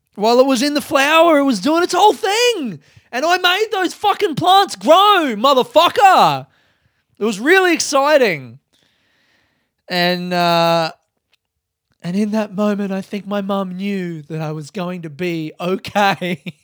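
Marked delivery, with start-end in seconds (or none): 12.0-16.4 wry, ironic, detached delivery. Recalling a moment her mum saw, in an ironic detachment voice. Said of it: "I say that in my ironic detachment voice".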